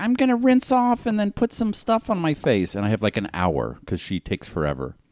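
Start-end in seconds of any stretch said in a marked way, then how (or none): 0.0-2.7 very high, shrill-toned voice. Retelling a Sunday night at home, imitating his wife. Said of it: "I'm doing an impression of my wife".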